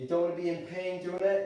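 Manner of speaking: normal talking voice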